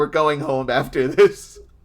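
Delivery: put-on, acted-out yelling. Retelling yelling while looking in the opposite direction, retelling a yell. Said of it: "yelling this".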